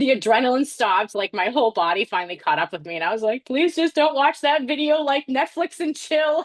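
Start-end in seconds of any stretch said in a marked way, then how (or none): 3.5-6.4 imitated sobbing, higher pitch. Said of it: "I just started crying so hard".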